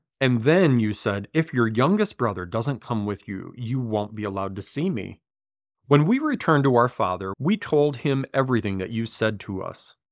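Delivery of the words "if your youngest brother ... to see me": plain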